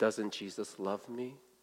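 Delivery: imitated old man whispering. Retelling a story where an old man whispers back: imitating an old man whispering. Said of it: "I whisper into Satan's ear".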